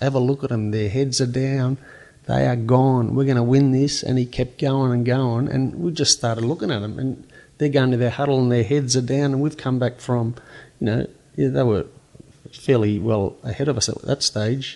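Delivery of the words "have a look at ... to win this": urgent, rallying, put-on screaming voice. Retelling a teammate's words in the three-quarter huddle: imitating someone screaming. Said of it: "he's screaming at the top of his voice".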